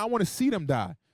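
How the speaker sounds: normal talking voice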